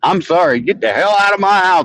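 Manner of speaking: loud, indignant voice.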